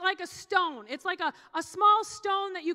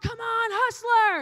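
encouraging, rallying shout; 4 semitones higher, 4 dB louder than usual. Retelling how the team cheered a kid nicknamed hustler: imitating a yell. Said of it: "when we would yell".

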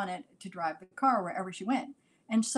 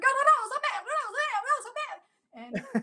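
mock shrill scream, very high and long drawn out. Retelling a mother running through the streets after the car: imitating a mother screaming. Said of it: "she'd come running after".

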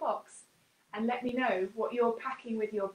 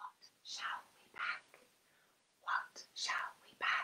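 soft, breathy whisper. Showing how to whisper the phrase into a neighbour's ear, in a whisper. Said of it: "you can whisper it like this".

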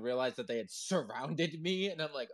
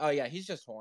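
casual, offhand, tossed-off, matter-of-fact tone. Retelling what a pirate said about a dancing ostrich: imitating a casual remark. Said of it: "He said it so casually".

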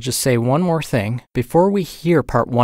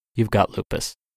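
flat deadpan, lower and quieter; 4 semitones lower, 4 dB quieter than usual. Retelling what the examiner said after checking blood results and x-rays, retelling a deadpan remark. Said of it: "he said in a deadpan voice".

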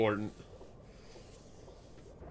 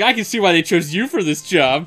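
mock high, loud, snooty, condescending voice. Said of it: "he sounds so condescending".

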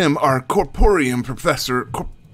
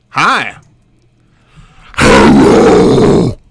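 very loud, blaring, much lower voice; 12 semitones lower, 12 dB louder than usual. Greeting listeners while testing a voice, very loud. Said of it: "I'm sorry if I blew out your earbuds".

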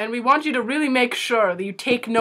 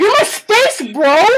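put-on angry drunk voice, much louder and higher; 6 semitones higher, 9 dB louder than usual. In a list of party personalities, the speaker plays the angry drunk. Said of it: "the angry drunk".

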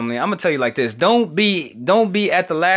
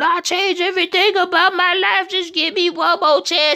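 mock sobbing, very high-pitched crying voice; 13 semitones higher than usual. Acting out people begging him for one more chance: imitating someone crying and pleading. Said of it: "They be crying".

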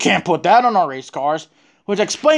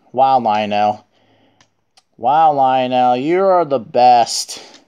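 slow, sarcastic, backhanded praising tone; 6 semitones lower than usual. Complaining about a diecast producer ruining a car model: sarcastic praise. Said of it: "I'm being sarcastic right here".

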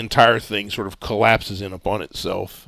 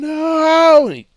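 shrill, high, stretched-out scream; 8 dB louder than usual. Game narrator voices a character as his work catches fire, screaming. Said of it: "Owen just screams".

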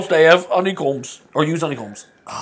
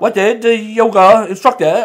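put-on Australian accent, loud and high-pitched; 5 semitones higher, 5 dB louder than usual. Reading a joke aloud because a game prompt asks for it, in an australian accent. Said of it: "Read the joke like an Australian accent".

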